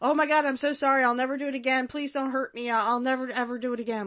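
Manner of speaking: high, frightened, cowering, desperate voice. Wondering how Bobby played the scene, imitating a battered wife pleading. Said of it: "act like I'm a battered wife".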